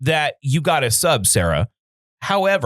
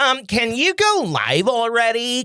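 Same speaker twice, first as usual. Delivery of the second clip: put-on woman's voice, high and slow; 7 semitones higher than usual. Doing an impression of a wife before going live: impression of wife. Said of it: "here's my impression of my wife".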